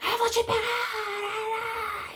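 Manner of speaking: acted horrendous screaming voice, very high, drawn out. Retelling what a voice on the radio shouted, in a hideous shouting voice. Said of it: "uma voz assim horrenda".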